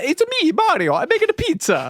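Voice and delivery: put-on very high, swooping, swinging Italian accent. Retelling a recording session running out of tape, the speaker does the Mario voice. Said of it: "Give us an Italian voice".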